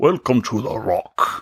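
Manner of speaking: every word stretched out. Showing what a hotel bellman might say: Sean Connery impression. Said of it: "my, uh, Sean Connery impression".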